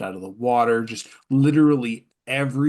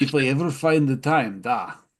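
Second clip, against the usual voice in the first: chuckling, laughing through the words while speaking; 3 semitones higher than usual. Voicing a character replying to an offer of paid work, laughing while talking. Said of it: "he sort of laughs, like".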